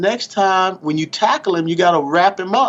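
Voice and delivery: put-on gentle, kindly, genteel Southern accent. Quoting Mom's advice after a hard tackle, soft, genteel Southern voice. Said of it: "real soft, genteel Southern voice".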